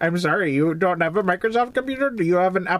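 Indian English patter. Playing a caller offering to unlock someone's computer, in an Indian accent. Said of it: "I do a very, very good Indian accent".

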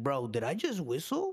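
stunned, amazed, disbelieving tone. Retelling a friend's sudden question after he stopped whistling: imitating Aaron. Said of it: "He's like".

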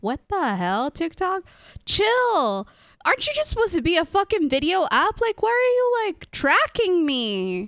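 exasperated, ranting delivery.

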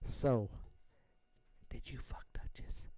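whispered, barely voiced, very quiet. Retelling what someone asked in a story, spoken very quietly. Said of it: "Sauce goes real quiet. Like".

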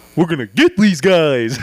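imagined shark character voice. Joking about sharks, the speaker tries out an imagined shark voice. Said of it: "put like a shark's head voice in my head".

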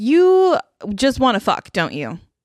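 heated, fed-up, exasperated yelling. Recounting confronting him in the room, retelling yelling at him. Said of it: "I'm just yelling at him now".

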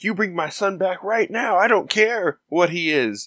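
mock forced, weepy, tearful fake-crying outburst. Retelling a movie scene where a mother begs for her son: imitating a crying scream. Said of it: "trying to cry at Sturgis and be like".

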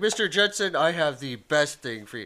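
loud, high, swooping sing-song cartoon voice, done badly. Imagining a cartoon car salesman: bad Fred Flintstone impression. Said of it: "I'm doing a really bad Fred Flintstone right now".

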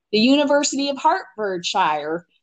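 put-on thickest Kansas Midwestern accent, swooping. Retelling a past reply in conversation, in a strong Kansas Midwestern accent. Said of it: "in probably the most Kansas Midwestern accent you can".

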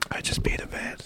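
soft, unvoiced whisper. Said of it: "Let's just whisper about him".

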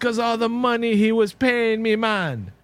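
put-on wannabe Jamaican accent. Retelling the end of a movie, quoting DJ: DJ's bad wannabe Jamaican accent. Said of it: "With that bad wannabe Jamaican accent that DJ had".

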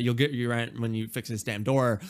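ordinary talk, nothing marked

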